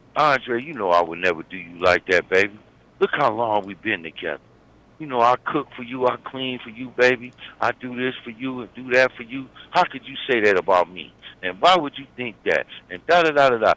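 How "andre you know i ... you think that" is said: two-faced, deceptive, falsely innocent tone. Acting out a girlfriend lying to her partner: imitating a deceiving girlfriend. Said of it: "She deceived you".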